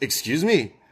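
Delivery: mock tough-guy voice. Retelling a scooter rider's retort while riding off: imitating someone talking tough. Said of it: "trying to talk tough while he's already riding off".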